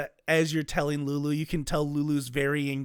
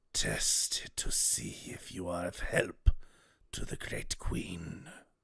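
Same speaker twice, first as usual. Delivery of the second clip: dragon-like voice, lower and quieter; 9 semitones lower, 8 dB quieter than usual. Voicing a voice that speaks to a player in a dream: draconic voice. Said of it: "you hear a draconic voice speak to you".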